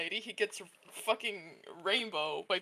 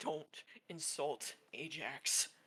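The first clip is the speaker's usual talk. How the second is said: whispery, breathy, bit-crushed, glitching distorted voice; 6 semitones lower, 12 dB quieter than usual. Voicing a glitching character who threatens: glitchy bit-crushed character voice. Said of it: "an overlap of a more Bit Crush version of his voice".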